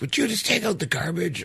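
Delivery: put-on furious angry snapping, very high-pitched. Retelling a past argument with the listener, imitating them angrily snapping. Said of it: "super fucking angry about it".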